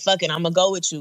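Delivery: normal talking voice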